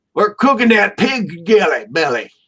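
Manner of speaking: accent from Oklahoma. Trying a line after being told to say it in Oklahoma, in an Oklahoma accent. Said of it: "let's say it in Oklahoma".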